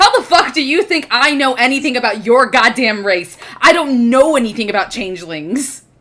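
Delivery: mock heated rant, going off. Playing a character who stops, stands up and answers: going off. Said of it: "going off".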